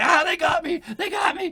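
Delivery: put-on shrill, very high, loud panicked yell, accent dropped. Player voicing a character being dragged by the collar: in character, accent dropped. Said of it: "He's completely lost his accent apparently".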